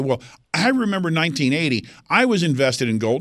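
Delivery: ordinary talk, nothing marked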